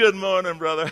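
put-on Southern accent. Mocking churchgoers who act sweet on arrival: imitating a put-on Southern accent. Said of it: "they're Southern all of a sudden".

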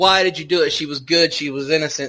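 ordinary talk, nothing marked

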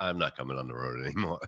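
quick, rattled delivery. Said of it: "And he goes".

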